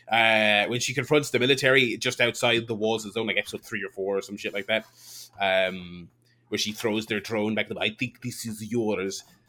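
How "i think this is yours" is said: slow, drawn-out put-on Russian accent. Retelling a show scene where a drone is thrown back: imitating Elizabeth Olsen's Russian accent. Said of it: "Elizabeth Olsen did a Ru-, a Russian accent".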